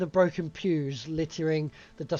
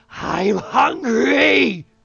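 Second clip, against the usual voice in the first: very loud, rough, rasping inhuman scream; 7 semitones higher, 11 dB louder than usual. Narrating a scene, voicing the scream from beneath the chapel floor: inhuman screaming voice. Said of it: "an inhuman scream that rises up from beneath the wooden floors".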